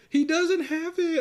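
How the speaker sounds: put-on very high, loud, pleading little girl voice.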